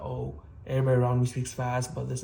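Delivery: ordinary talk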